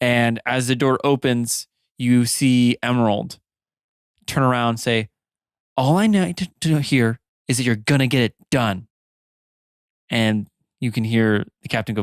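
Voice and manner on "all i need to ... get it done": furious, stern, very angry woman's voice. Narrating a scene where Emerald turns around as the door opens, very angry. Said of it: "a woman's voice, very angry".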